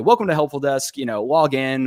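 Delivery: normal talking voice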